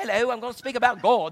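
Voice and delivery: sudden put-on British accent out of nowhere. Retelling how a church visitor got up and began his talk, british accent. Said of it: "he started speaking in a British accent".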